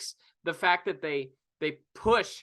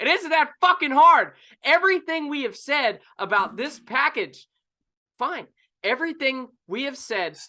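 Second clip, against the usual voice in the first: full-on, loud, high-pitched shouted rant; 8 semitones higher, 6 dB louder than usual. Complaining to the other speaker, who egged them on, yelling. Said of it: "stop yelling".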